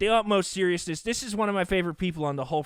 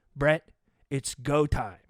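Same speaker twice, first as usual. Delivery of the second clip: mock grave, dead-serious, low and slow; 5 semitones lower than usual. Retelling what the other speaker said on the line: imitating a very serious tone. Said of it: "you said to me in a very serious tone".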